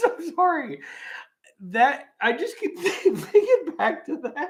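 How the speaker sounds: words squeezed out between laughs. Apologizing to the audience while reading aloud, laughing while talking. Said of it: "I'm laughing too hard".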